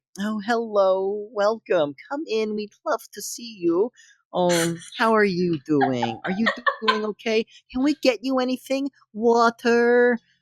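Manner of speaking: condescending. Voicing locals welcoming a rugged visitor: super condescending. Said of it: "it's super condescending".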